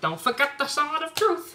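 high, wide-ranging, playful, cheeky cartoon voice.

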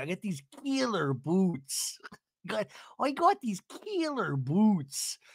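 put-on slow delivery with an almost Canadian accent. Repeating a woman's line while listening to it back, in an almost Canadian accent. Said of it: "It almost sounds Canadian".

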